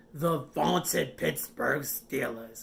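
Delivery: creaky, terrible, bad boomer-style voice. Discussing a big week thirteen matchup with a co-host, put on a terrible boomer voice. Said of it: "that's my terrible boomer voice".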